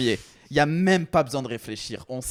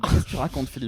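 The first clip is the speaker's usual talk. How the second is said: plain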